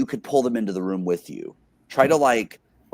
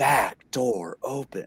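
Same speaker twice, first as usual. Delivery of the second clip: eerie, creepy woman's announcer voice. Retelling a house's door alert, imitating its creepy female voice. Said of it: "there was a creepy female voice that would say".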